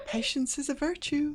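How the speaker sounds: put-on woman's voice, very high. A creature speaks in several borrowed voices; this line in a woman's voice. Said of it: "in this woman's voice".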